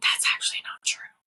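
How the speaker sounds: breathy, soft pretend stage whisper, barely voiced. Describing being a cryptid heard from the woods: pretend whispering. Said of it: "you'll just hear somebody whispering".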